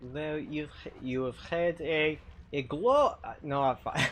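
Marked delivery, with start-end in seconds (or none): 0.1-3.2 put-on French accent. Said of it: "you have to speak with the, the French accent".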